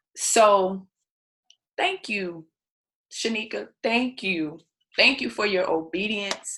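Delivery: heartfelt emotional voice. Thanking another speaker for her obedience: emotional. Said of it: "I'm not going to apologize for getting emotional".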